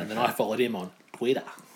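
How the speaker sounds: word said with Australian pronunciation. Explaining how they came to follow someone on twitter, australian accent. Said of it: "That's how Aussies say it".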